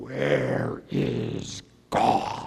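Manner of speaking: deep-voiced, low delivery. Recounting what a man asked him during a session, repeating it in a deep voice. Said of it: "He said to me in a deep voice".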